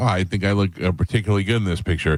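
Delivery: ordinary delivery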